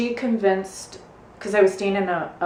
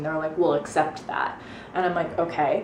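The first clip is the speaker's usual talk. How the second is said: usual speaking voice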